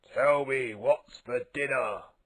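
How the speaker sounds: growling dinosaur voice. Reading a story aloud, voicing the visitor at the table: growled. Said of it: "he growled".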